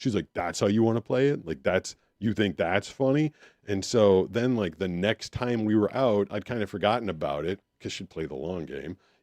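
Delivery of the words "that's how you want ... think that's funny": put-on dead serious, stern tone. Retelling a girlfriend's reply after her dance was mocked: imitating someone dead serious. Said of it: "real serious, and not, like, play serious".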